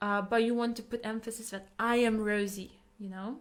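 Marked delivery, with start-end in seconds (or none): none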